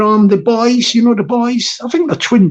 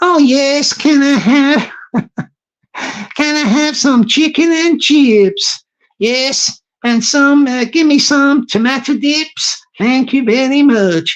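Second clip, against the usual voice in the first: casual put-on American accent; 3 semitones higher than usual. After a live, the host imagines ordering lunch in London, in an American accent. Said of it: "I might just carry this American accent with me".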